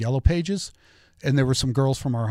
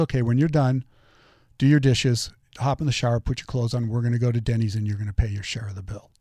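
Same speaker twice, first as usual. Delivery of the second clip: mock unruffled, businesslike, matter-of-fact, rattled off quickly; 2 semitones lower than usual. Quoting the speaker's schoolteacher mom's reply; retelling mom's calm, matter-of-fact voice. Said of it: "in the calmest, matter-of-fact voice".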